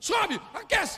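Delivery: very high-pitched, barked shouting. Imagining the man shouting on the fourth day: imagined shouting. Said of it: "eu imagino o cara gritando".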